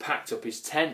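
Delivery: plain reading voice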